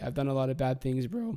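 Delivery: cracking, breaking voice. Confessing past wrongs, the speaker's voice cracks. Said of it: "that voice crack".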